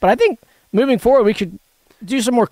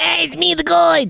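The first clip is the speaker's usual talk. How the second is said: high, creaky, raspy put-on character voice; 7 semitones higher than usual. Introducing himself as the Goid in a comedy bit: Goid voice. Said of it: "You do a really good Goid".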